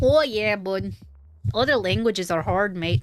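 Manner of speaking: accent wavering between Canadian and Australian. Speaker struggling with foreign words jokes around, in a Canadian-Australian accent mix. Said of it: "I was going between Canadian and Australian there".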